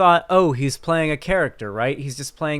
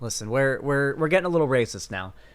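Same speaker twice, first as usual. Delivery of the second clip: usual speaking voice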